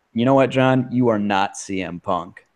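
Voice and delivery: ordinary talk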